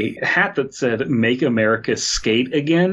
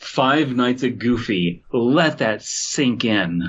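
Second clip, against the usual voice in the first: put-on, self-satisfied, smug, slow delivery. Joking about a game title in the role of a Twitter woman: put-on smug Twitter woman voice. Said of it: "smug liberal Twitter woman and say".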